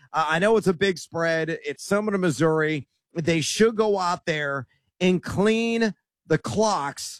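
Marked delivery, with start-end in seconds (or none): 3.1-7.2 slow, measured, carefully spaced words. On air, previewing tonight's college football game, the speaker says this slowly. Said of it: "I got to say that slowly".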